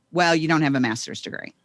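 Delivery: careless, offhand, flippant, dismissive tone. Retelling the boss's answer about promotion: imitating a flippant reply. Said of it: "he just very flippantly, without even looking at me".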